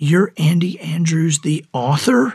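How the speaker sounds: acted-out put-on whisper. Retelling how a man at his table leaned over to ask, retelling a whisper. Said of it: "he leans over and he whispers".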